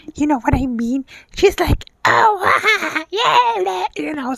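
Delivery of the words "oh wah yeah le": crazy character voice, high and drawn out. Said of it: "so crazy".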